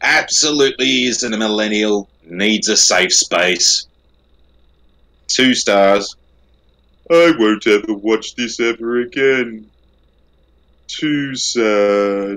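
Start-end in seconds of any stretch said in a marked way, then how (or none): 5.3-12.4 gloomy, sad, drawn-out robot voice. Reading a two-star review aloud to the others, Marvin voice. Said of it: "you did a perfect Marvin right there".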